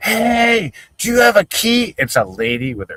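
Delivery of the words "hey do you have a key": play-acted very high, slow, loud, drawn-out hollering. Retelling how a man yelled at a lady: imitating someone yelling. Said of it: "he's yelling".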